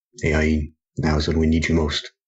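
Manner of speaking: muttered under the breath. Voicing the character Ball as he calls to Ayin, muttered under his breath. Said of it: "under his breath say".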